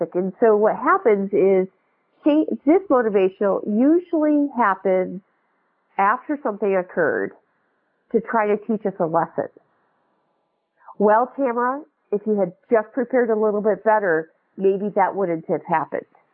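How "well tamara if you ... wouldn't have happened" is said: ordinary talk, nothing marked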